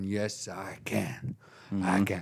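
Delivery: put-on American accent. Speaker answers everyone shouting that she can't, in a put-on American accent. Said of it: "That's my American accent".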